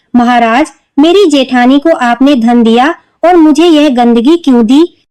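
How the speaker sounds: usual speaking voice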